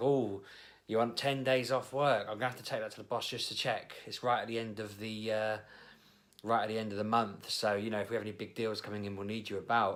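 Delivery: normal talking voice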